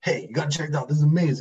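lively hyped presenter voice. Showing how he now tries to sound in videos: imitating his own animated delivery. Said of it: "I'm trying to be more animated".

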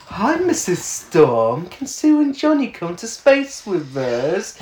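patronising, very condescending, superior, talking-down tone. Recapping a scene where Ben addresses Sue and Johnny's mum, mock-condescending Ben voice. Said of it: "in a very condescending voice".

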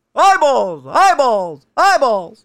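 high, loud yell. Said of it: "they're yelling eyeballs".

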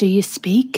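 whispering. In a game scene, a character whispers a question: whispering. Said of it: "I'm just going to whisper".

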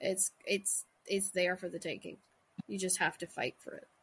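ordinary delivery

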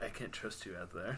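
very soft, quiet, muttered wiener voice. Quoting a movie line in a put-on voice: Val Kilmer wiener voice. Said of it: "Just Val Kilmer's wiener voice".

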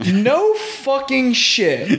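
high, slow laughing scoff of disbelief.

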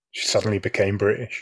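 ordinary delivery

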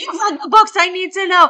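frantic hysterical screaming, very high and very loud. Retelling how Mom screamed at the speaker on the phone; imitating Mom screaming. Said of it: "screaming at me on the phone".

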